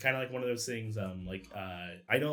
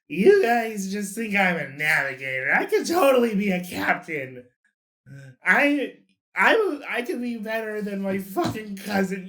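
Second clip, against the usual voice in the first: put-on very high, very loud, boastful drunken voice; 10 semitones higher, 11 dB louder than usual. Asked how Quibble sounds drunk, a game narrator voices him, drunk Quibble voice. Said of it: "What does he sound like when he's drunk?".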